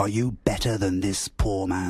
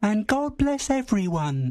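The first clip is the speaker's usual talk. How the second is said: feeble, weak, very high little voice; 13 semitones higher than usual. Reading a Christmas dinner scene aloud, a toast: weak voice. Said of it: "said Tiny Tim in his weak voice".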